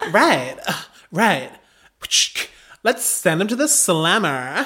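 tried-on American accent. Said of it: "Is that American?".

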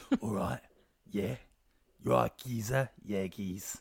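low, dropped character voice. Describing an imagined documentary where one actor plays both roles: Danny Dyer impression. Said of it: "He's like".

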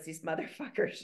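quiet mutter under the breath. Retelling what a mother said to her daughter: imitating someone muttering under breath. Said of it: "under her breath".

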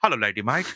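father-like voice. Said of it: "my dad calls women, he goes".

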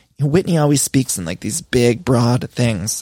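ordinary talk

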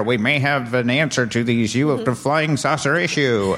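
put-on vintage newsreel, old-time radio announcer delivery. Quoting an old radio news report, in an old-time radio announcer voice. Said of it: "why they talked like that back in the old days on the radio".

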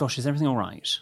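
pointed, passive-aggressive, put-on worried politeness. Acting out a reply to someone at the table on their phone: acting passive-aggressive concern. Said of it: "That's so passive aggressive".

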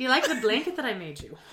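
put-on Irish accent. Playing out a pretend cameo message: Irish accent. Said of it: "I'm going Irish now".

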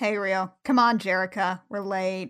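mock goth teen monotone. Acting out a cartoon character's line from the show, mock monotone goth teen. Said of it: "dark and, like, monotone".

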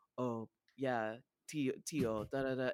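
mock deep, sexy voice, put on. Fan describing the uncle character in a show: imitating a deep sexy voice. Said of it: "he has this deep sexy voice".

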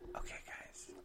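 very soft, breathy ASMR whisper. Wrapping up the episode to the listeners: ASMR voice. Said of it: "don't do your A S M R voice".

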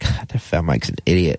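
ordinary delivery

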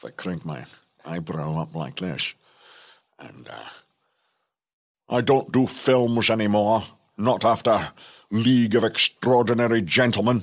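nasal, through-the-nose film-star voice. Doing an impression after being told he could be a double: Sean Connery impression. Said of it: "the usual impression of Connery".

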